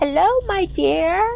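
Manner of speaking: put-on very high, frail elderly woman's voice. Retelling an old woman's greeting while the speaker was raking: frail elderly woman's voice. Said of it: "very elderly woman's very frail voice".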